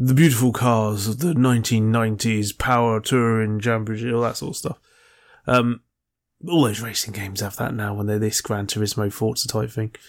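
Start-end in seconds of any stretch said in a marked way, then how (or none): 0.0-4.1 put-on, pretentious, posh announcer voiceover voice. Imitating the game's voiceover while describing its presentation: pretentious voiceover voice. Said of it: "He does all the pretentious".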